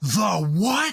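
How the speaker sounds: mock short, mild shouted line. Retelling how the judge stopped him in his tracks: imitating a yell. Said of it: "He yelled at him".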